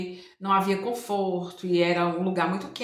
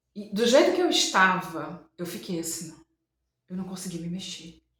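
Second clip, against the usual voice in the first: ordinary talk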